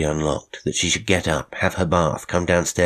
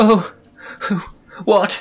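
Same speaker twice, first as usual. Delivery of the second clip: very high voice of terror; 4 dB louder than usual. Someone in bed cries out as a man switches on the light, terrified. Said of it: "A voice of terror came from the bed".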